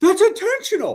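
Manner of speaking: very high, loud partisan fan-style crowd holler. Retelling the reaction to a hard foul on a fast break, imitating someone yelling. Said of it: "Fran literally yells".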